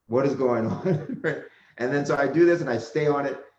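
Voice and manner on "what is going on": put-on taken-aback surprise, slower pace. Retelling how a supervisor reacted to him and his brother: imitating a taken-aback supervisor. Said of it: "was like taken aback and said".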